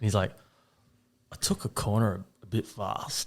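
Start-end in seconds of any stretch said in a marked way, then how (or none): 1.3-3.3 put-on acted, slow, heavily slurred drunk speech. Retelling a drunk neighbour's phone call, imitating drunk slurring. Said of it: "He's hammered drunk".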